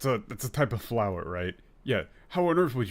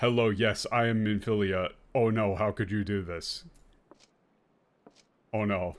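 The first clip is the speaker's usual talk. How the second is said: put-on flat indifferent voice, lower; 3 semitones lower than usual. Mocking how a character sounds flat in the English dub: imitating a flat, uncaring Minfilia. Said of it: "She's just like".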